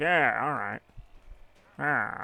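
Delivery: slow character voice with words dragged out. Playing a kart race, imitating Wario. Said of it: "Wario's like".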